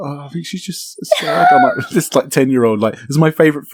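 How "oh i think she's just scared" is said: acted anxious voice, high and small. Recalling answering an angry man during a favorite film at age ten, retelling a nervous reply. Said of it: "getting quite nervous".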